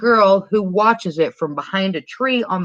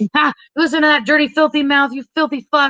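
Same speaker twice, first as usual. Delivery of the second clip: high, yelling, scolding call-out; 8 semitones higher than usual. Retelling a film scene where a prank caller turns on Dottie: imitating someone yelling. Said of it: "hears her yelling at Dottie".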